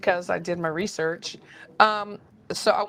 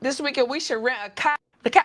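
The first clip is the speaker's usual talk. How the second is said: put-on Boston accent throughout; 5 semitones higher than usual. Retelling what a friend said when they first met: imitating Mark's Boston accent. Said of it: "it's funny how y'all have the accent".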